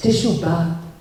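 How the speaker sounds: "teshuvah" pronounced Syrian-style, Syrian accent. Teaching a Hebrew word, saying it with a Syrian accent. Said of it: "I'll say it like a Syrian".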